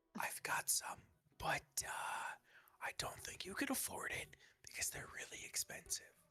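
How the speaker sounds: hushed whisper. Answering a character asking for herbs, in character: whispering. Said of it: "I'm gonna whisper this so the birds don't hear it".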